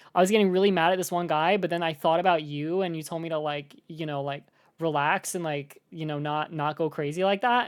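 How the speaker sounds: ordinary talk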